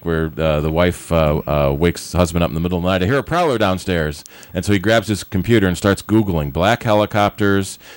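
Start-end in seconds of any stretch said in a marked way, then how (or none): none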